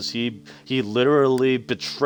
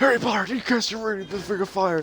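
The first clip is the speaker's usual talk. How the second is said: put-on old wizard voice, higher; 9 semitones higher than usual. Joking about a game scene, acting out a line: Dumbledore impression. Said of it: "as Dumbledore, uh, quietly says".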